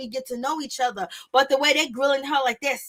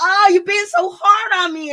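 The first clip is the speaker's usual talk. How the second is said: mock sobbing, higher and louder; 6 semitones higher, 7 dB louder than usual. Retelling how she answered his quiet criticism, imitating someone crying. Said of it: "and just balling up".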